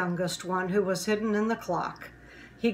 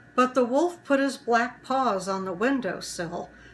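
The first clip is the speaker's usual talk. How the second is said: ordinary delivery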